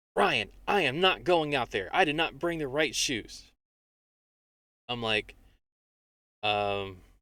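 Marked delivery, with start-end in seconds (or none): 0.1-3.4 loud, high, right on the verge of screaming. Telling a story about an outing with the kids, the speaker quotes her, retelling a near-scream. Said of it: "kind of like almost not screaming".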